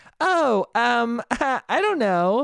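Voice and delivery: very slow, high put-on little-girl voice. Acting out a grown woman answering a creepy old man, in a fake little girl voice. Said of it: "doing a little girl voice who's like".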